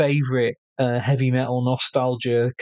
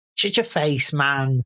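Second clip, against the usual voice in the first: mocking put-on impression voice. Testing the mic, the speaker mimics the other person: impression of the listener. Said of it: "That's my impression of you".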